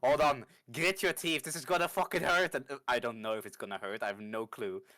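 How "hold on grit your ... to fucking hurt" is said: overplayed, dramatic, urgent acted delivery. Holding down a wounded ally and giving him a potion: dramatic in-character urging. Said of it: "really dramatically hold you down".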